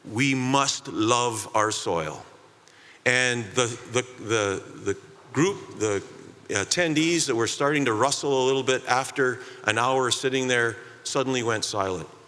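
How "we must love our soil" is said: put-on heavy Spanish accent, very slow and deliberate. Retelling a farmer's closing statement: Carlos's strong Spanish accent. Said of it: "in his very strong Spanish accent".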